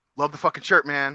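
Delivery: ordinary talk, nothing marked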